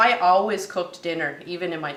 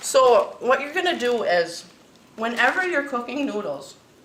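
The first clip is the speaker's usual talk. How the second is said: talking with mouth full, higher pitch; 6 semitones higher than usual. Explaining how to cook noodles, talking with mouth full. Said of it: "as I'm talking with my mouth full".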